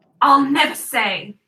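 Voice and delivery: loud, called-out yelling shout. Voicing a character who shouts back a refusal: shouting. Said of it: "Edge shouts out".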